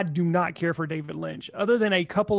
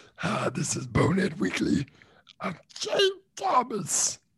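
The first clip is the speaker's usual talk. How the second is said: hushed, breathy, whispered voice; 4 dB quieter than usual. Opening the show as another speaker: imitating James. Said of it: "my James impression".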